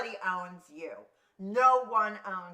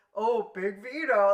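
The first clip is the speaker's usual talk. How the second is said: loud, mock contemptuous, disdainful tone; 2 semitones higher, 6 dB louder than usual. Retelling how the host greeted a guest: imitating the host's contempt. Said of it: "he hated Vito's guts".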